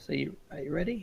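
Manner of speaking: very quiet half-whisper, under the breath. Playing a character half-whispering to Kairos, asking if ready: half-whispering in character. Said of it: "whisper to Kairos".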